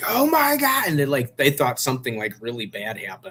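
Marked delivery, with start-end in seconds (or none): 0.1-0.9 play-acted very high, loud excited shriek. Retelling own reaction to seeing a friend win: retelling a scream.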